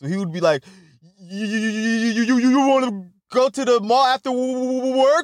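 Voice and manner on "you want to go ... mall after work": very high, slow, drawn-out stutter on "you". Telling a story about a guy named Cooper, imitating Cooper's stutter. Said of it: "he would stutter on the first and the last word".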